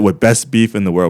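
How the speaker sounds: ordinary talk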